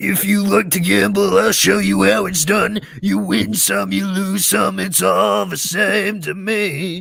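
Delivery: rough, high voice scraped out from the throat. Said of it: "that voice tears my throat".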